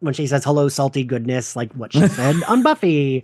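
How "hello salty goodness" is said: ordinary talk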